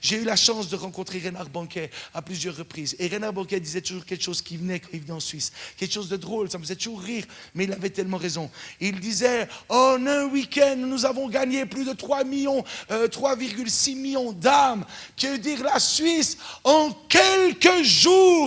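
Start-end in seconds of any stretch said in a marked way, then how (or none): 9.7-18.5 put-on booming shouted preacher voice, higher, louder. Retelling what a visiting preacher always said: imitating Reinhard Bonnke yelling. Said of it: "mais il hurlait comme ça".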